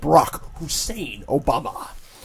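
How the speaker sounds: radio announcer style. Joking about a devil looking like Obama: Rush Limbaugh impression. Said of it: "my only Rush Limbaugh impression".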